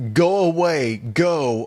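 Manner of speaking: acted-out scolding yell, shooing tone. Retelling how Buck shouted at the creature: imitating Buck yelling. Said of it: "like he's yelling at, at a dog".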